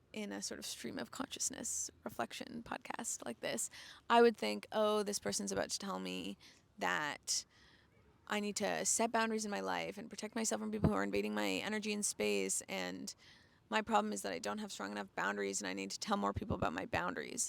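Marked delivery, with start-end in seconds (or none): none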